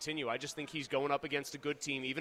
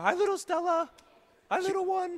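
sing-song cooing; 9 dB louder than usual. During a segment, a host greets baby stella with baby talk. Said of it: "Should I do baby talk to you?".

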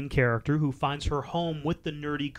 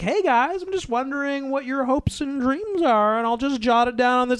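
very high, forced, fake hip-teen voice; 9 semitones higher than usual. Mocking a character asking students their hopes and dreams: imitating an adult posing as a teen. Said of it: "That's kinda what it sounds like".

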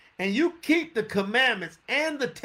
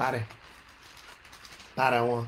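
low, put-on rural country accent; 10 semitones lower, 4 dB quieter than usual. Speaker looking up a bible verse says the chapter number in a country voice. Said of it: "I can say in my country voice".

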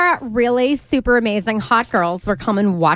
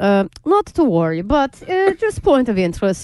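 mock Russian accent in newscaster style. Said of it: "you do the Russian accent".

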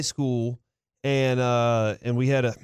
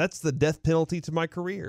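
usual speaking voice

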